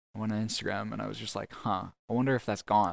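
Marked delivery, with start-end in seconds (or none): none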